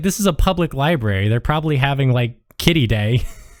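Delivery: ordinary delivery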